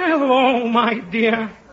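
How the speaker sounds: put-on elderly gentleman voice. Showing the other speaker the voice they'll be doing: old man's voice. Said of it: "My old man's voice".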